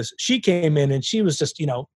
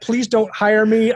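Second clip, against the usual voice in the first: put-on tearful crying voice, higher pitch; 6 semitones higher, 4 dB louder than usual. Retelling how a seventeen-year-old pleaded while crying: imitating someone crying. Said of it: "she literally cried the entire time".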